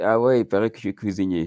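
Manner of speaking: usual speaking voice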